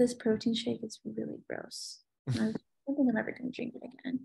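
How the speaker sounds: serious, grave, confiding, close, leaning-in delivery. Demonstrating tonality by leaning in to speak: serious, leaning-in tone. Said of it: "if I lean in and say, ... You're probably thinking I'm saying something super serious".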